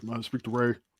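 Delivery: scary, menacing mafia-heavy mobster voice. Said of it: "just with the voice and the look, he would scare".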